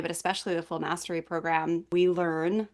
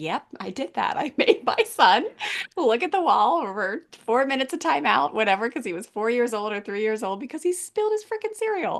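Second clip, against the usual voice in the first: mock laughing, high, giggly, light and easy sing-song; 6 semitones higher than usual. Imitating Shani looking back on her past, imitating Shani giggling. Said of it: "able to giggle a little bit and be like".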